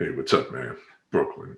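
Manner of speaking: very low, bass-deep delivery. Imitating a fellow inmate who sounds like Billy Dee Williams: deep voice. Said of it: "Real deep voice. Sounds like Billy D Williams".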